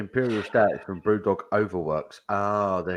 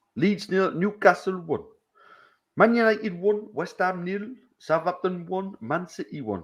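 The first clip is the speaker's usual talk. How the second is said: bad Geordie accent, very high, slow; 12 semitones higher than usual. Reading out football scores in a Geordie accent. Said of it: "Geordie football scores".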